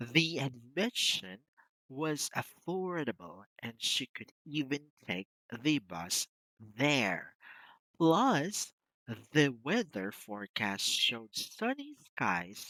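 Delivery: slow, loud, deliberate delivery, words stressed. Showing a learner how to read the interview passage: slow reading with emphasis. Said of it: "I want you to read it slowly".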